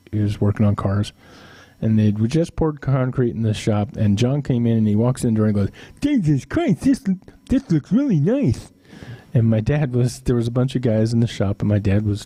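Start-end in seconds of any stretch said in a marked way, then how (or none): 6.0-8.7 very high-pitched voice. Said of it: "and John talked like this".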